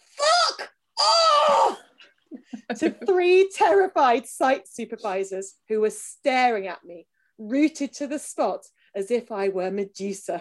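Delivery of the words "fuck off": very high, loud, drawn-out shrill screech. Narrator wrenches the front door open at three site supervisors, screeching. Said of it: "I wrenched the front door open and screeched".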